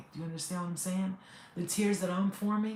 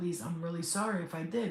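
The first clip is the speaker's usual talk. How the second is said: plain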